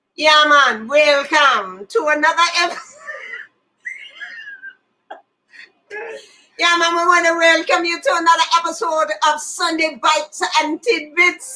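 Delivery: put-on Jamaican accent. Opening another episode of the show, a co-host speaks in a jamaican accent. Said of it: "I'm going to do it in Jamaican".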